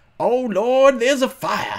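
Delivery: high, slow lady's voice, drawn out. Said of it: "in that lady's voice".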